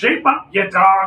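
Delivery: high, drawn-out, shouted commanding yell. Voicing a pirate captain ordering his crew on: captain yelling. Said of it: "the captain yells".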